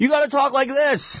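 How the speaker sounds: very high, loud shout. Demonstrating how an announcer calls a live show in a higher register, shouting. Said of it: "that's the loudest I've shouted in 5 years".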